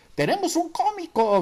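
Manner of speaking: high-pitched, loud, shouted yell. Another waiter calls out after the narrator hands back the menu unread; shouted. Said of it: "gritó por ahí otro mesero".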